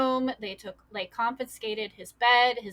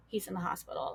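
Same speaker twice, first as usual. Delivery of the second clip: hushed, barely audible near-whisper; 2 semitones lower, 9 dB quieter than usual. Retelling calling a parent from the hospital waiting room: retelling a barely audible voice. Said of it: "I'm barely audible".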